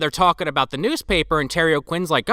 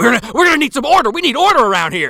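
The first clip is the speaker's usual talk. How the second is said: acted-out screaming, high, loud, losing control; 7 semitones higher, 5 dB louder than usual. Retelling a film scene where a man smashes things in a rage: imitating someone screaming. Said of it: "screaming at himself".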